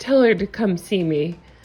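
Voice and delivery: plain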